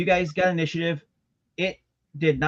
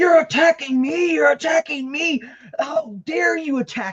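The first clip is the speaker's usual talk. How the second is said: very high, furious, raging monster shriek; 11 semitones higher, 4 dB louder than usual. Voicing a beastie attacked by the party: monster screaming in rage. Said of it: "it's screaming".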